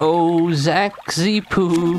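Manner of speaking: high goofy character voice.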